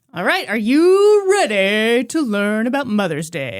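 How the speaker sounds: hyped, arena-pumping sports announcer voice. Podcast host introducing the episode topic to a co-host: sports announcer voice. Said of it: "trying to be like a sports announcer".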